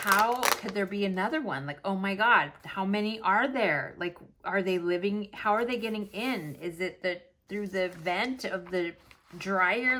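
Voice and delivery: ordinary delivery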